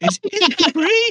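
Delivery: voice rises at the end, on free. Repeating how someone else asked the question, with the voice lifting at the end. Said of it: "the voice lifted at the end there".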